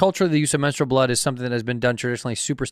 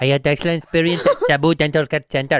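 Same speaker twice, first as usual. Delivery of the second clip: put-on Indian English accent; 3 dB louder than usual. Reading a dental clinic review aloud at a friend's urging, in a put-on indian accent. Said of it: "do the accent".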